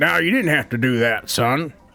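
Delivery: gruff, surly, reluctant, grudging tone. Voicing a farmer who thanks the players for their help: surly. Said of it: "in a really surly way".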